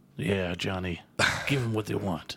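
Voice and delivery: low, creepy, self-styled cool-guy voice. Cohosts joke about a made-up catchphrase, saying it in the creepy cool voice. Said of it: "That sounds really creepy".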